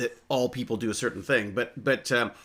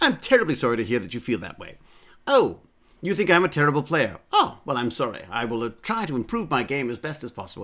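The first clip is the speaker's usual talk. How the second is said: put-on, very polite, courteous British accent. Speaker demonstrates replying to someone calling them a terrible player: very polite British accent. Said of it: "respond in a very polite British accent".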